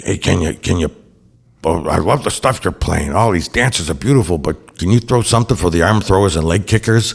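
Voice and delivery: gruff, rough-edged speaking voice. Retelling a guy coming up to the booth asking for songs, in Ron Pellini's gruff voice. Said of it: "he had this gruff voice".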